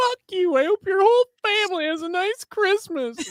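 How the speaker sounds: acted, very high, shrill, furious, tearful crying outburst. Retelling a game streamer's outburst: imitating a crying, furious streamer. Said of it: "he's so pissed off. He's like crying tears".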